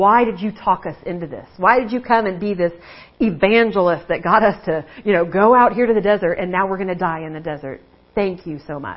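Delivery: angry, scornful, mocking sarcastic tone. Retelling how the people in the desert blamed their leader; acting out angry mockery. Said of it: "they're like kind of mocking and angry".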